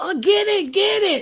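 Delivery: mock very slow, high, stretched-out scream. Speaker acting out his woman screaming at him to kill a bug, imitating a woman screaming. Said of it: "you hear your woman screaming".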